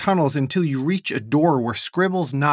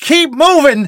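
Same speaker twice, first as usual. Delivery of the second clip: shrill, very high, very loud screeching; 12 semitones higher, 10 dB louder than usual. Reading a story aloud, voicing a character's line with a screech. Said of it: "Nessa screeches".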